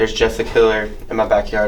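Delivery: ordinary talk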